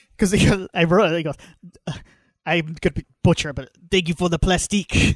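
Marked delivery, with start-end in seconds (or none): 2.4-5.2 put-on Creole-style accent. Quoting an actor's line from the movie: imitating Ben Foster's Creole-style accent. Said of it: "attempting to do, like, a Creole style accent here".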